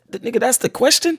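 plain

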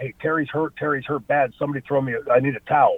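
usual speaking voice

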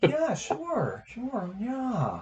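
very slow, high, swooping, stretched-out drawl. Retelling saying yes to chocolate chip cookies: Owen Wilson voice. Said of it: "Owen Wilson voice".

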